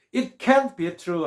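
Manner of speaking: can't said strongly with heavy stress. Explaining how stressing can signals negation: stressed can't. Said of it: "can을 강하게 하면 부정으로".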